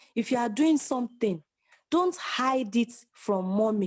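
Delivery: ordinary talk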